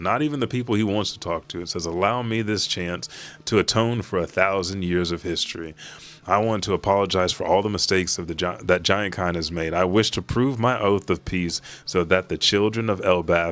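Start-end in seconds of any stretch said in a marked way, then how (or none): none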